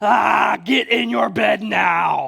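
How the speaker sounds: put-on harsh angry yelling. Retelling yelling at a boy to get in bed, retelling an angry, harsh yell. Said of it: "I yelled in my loudest, harshest, angriest voice".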